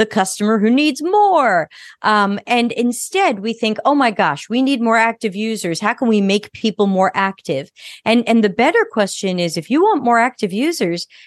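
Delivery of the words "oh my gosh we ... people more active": usual speaking voice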